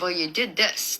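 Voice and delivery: ordinary talk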